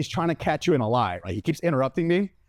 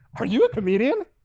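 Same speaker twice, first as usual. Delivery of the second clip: playful, amused, pitched-up voice; 6 semitones higher than usual. Retelling being handcuffed, the speaker quotes an officer interrupting: imitating Officer Luigi, smiling. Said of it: "with this huge smile on his face".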